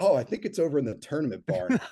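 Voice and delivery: deadpan, slightly high. Retelling how Bill answered a request for a sod stretcher: imitating Bill's deadpan reply. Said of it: "straight faced is like".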